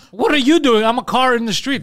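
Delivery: high, loud mock yell.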